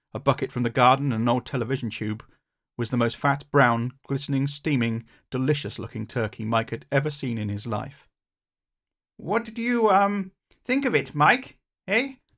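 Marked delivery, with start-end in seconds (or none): 9.1-12.1 proud, high, halting gurgle. A narrator reading a story, voicing the inventor asking Mike: gurgling Beaker voice. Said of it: "That was [name]'s voice. / he said. / so as not to hurt the inventor's feelings".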